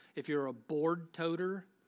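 southern drawl coming through in the speech. Listing skills people can share, the speaker lets a southern drawl come out. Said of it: "now my southern drawl is coming out now".

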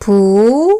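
부 with pitch climbing at the end. Teaching tones, practicing a syllable: rising tone on 부. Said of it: "이성으로 해볼게요. 이성의 포인트는 마지막 소리가 위로 올라가야 해요".

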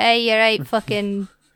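put-on Scottish accent. Voicing a robot dog said to have a Scottish voice: put-on Scottish accent. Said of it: "the one that's got the Scottish voice".

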